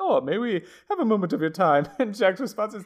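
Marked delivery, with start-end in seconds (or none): 0.0-1.9 put-on posh, upper-class British accent. Retelling a scene, voicing a talking dog asking for a moment, posh british accent. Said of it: "comes up in like a posh British accent".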